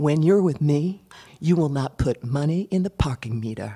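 put-on male Southern American accent. The speaker quotes a man from the South, imitating his Southern accent. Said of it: "he had a Southern accent".

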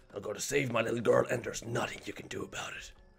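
rough, hard-edged, gruff tough-guy voice. Player voicing the character while playing a game, gruff voice. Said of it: "You like my gruff voice?".

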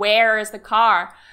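said the American way. Showing how others would say a question, in an American accent. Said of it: "say like in an American way".

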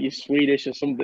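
usual speaking voice

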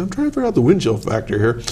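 plain

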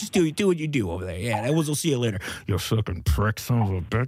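spoken out of the side of mouth. Playing a new character who slips in insults out of the side of his mouth. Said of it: "Insults out of the side of his mouth".

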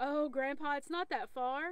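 ordinary delivery

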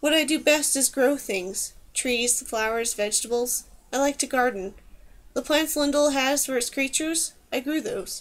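ordinary delivery

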